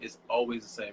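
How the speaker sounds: stress on always.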